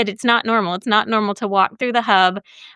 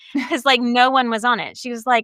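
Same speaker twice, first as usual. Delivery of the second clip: ordinary delivery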